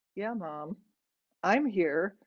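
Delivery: ordinary delivery, nothing marked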